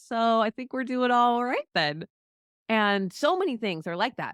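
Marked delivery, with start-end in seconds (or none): 0.1-2.0 mock dry, teasing sarcasm, pitched-up and wry. Imagining Jesus asking someone worried about money: imitating sarcastic Jesus. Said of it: "sarcastic Jesus next to us going".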